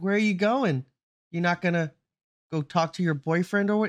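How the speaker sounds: high-pitched mocking taunt. Retelling how a character taunted someone walking to her death: imitating a mocking taunt. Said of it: "mocking it".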